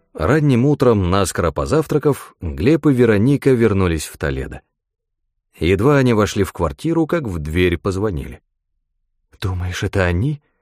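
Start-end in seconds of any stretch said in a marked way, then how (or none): 9.4-10.4 frightened, fearful whisper. Right after the doorbell rings, a woman asks her companion in a frightened whisper. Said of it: "испуганно прошептала Вероника".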